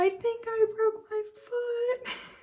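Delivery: put-on crying through the words, very high. Retelling what was said to a boyfriend: imitating own past sobbing. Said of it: "I'm sobbing".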